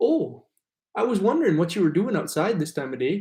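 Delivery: Minnesota accent that sounds Canadian. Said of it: "es como el acento canadiense".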